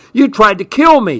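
high, shrill screeching outburst. Narrator voices a man, hit by a thrown object, accusing her; screeching. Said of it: "he screeched".

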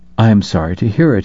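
plain reading voice

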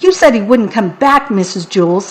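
usual speaking voice

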